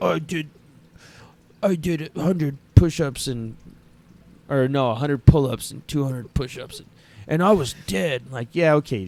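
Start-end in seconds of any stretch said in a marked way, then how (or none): 0.0-8.2 put-on macho bragging tone. Retelling how a friend bragged about his workout: imitating a macho boast. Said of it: "He's trying to be all macho".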